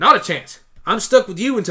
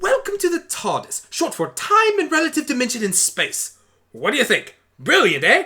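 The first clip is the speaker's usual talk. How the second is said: excitable, rapid, pitched-up, tumbling-out eager voice; 6 semitones higher than usual.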